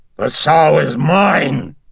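very high, coarse, powerful, drawn-out roaring bellow. Reagan suddenly sits up after striking the man and bellows: coarse, powerful bellow. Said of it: "she bellowed in a coarse and powerful voice".

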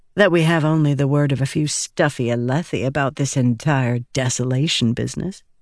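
plain

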